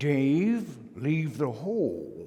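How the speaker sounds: hushed, swooping cartoon villain voice, "hole" drawn out. Recalling what the class float's supervisor would say to Dave, in a Simon Barsinister voice. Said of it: "he would say in the voice of Simon Barsinister".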